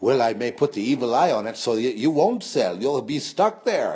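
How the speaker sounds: speaking through laughter. Retelling what a man said when they went to sell: imitating a man laughing while talking. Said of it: "And he was laughing".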